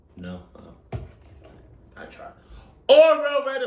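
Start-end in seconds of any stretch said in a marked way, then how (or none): 2.9-3.7 yelling, much higher and louder. Calling out a brand name hoping for a sponsor, yelling. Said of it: "Oh no, I'm yelling".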